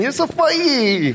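put-on very high little-kid voice, funny mispronounced words. Speaker retelling what a small child said to him: imitating toddler mispronouncing funny. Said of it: "he couldn't say funny".

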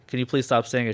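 put-on, really firm delivery. Retelling a coworker asking another to stop: imitating a really firm request. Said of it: "really firm".

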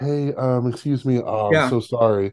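slow, sheepish, over-polite millennial voice. Acting out complaining about a wrong plate: apologetic millennial voice. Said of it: "in a very millennial".

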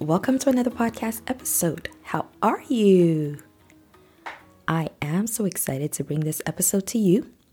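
deep-toned, hoarse voice. Welcoming listeners to the episode while struggling with a cold: deep-toned voice from a cold. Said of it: "I sound a little bit deep toned today".

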